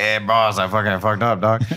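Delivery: put-on Mexican accent. Retelling what his character Gideon said, in Gideon's Mexican accent. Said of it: "he has got a Mexican accent".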